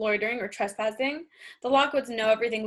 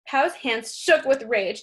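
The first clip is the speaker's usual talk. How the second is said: ordinary delivery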